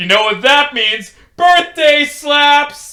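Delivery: put-on rowdy, brash drunk voice, loud and very high. Storyteller voicing a player character when a goblin bartender mentions his birthday: drunk Dipo voice. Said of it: "In the third installment of The Ballad of Mack Wilde, I tell the story of Dipo, a murder hobo who was funny until he wasn't. / He rolled a new character, / drunk".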